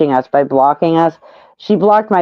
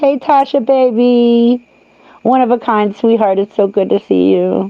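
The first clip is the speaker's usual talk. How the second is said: fake, high, syrupy, drawn-out baby-talk gush; 5 semitones higher than usual. Mocking an overdone greeting to viewers: mock love-bombing pet-name greeting. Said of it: "my own subs don't want me sitting here being like".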